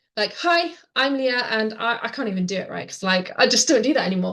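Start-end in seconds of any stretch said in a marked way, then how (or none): 0.4-1.5 stiff, mechanical, robot-like delivery. Recalling a first video on camera: imitating own robotic delivery.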